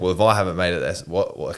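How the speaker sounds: ordinary delivery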